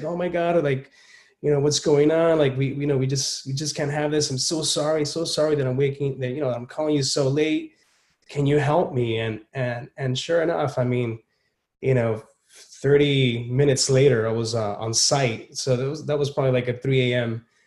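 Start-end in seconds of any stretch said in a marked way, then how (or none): 0.0-9.2 imitated panicking voice. Retelling a late-night call from a client: imitating a panicking client. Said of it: "she's panicking, you know, she's just like".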